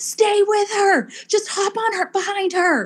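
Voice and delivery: put-on, very high-pitched screaming. Retelling others screaming race advice: imitating people screaming. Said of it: "they're all screaming".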